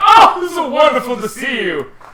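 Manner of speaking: jovial, hearty, swooping, shrill, booming, very high and loud. Recalling how a character greeted the party: jovial.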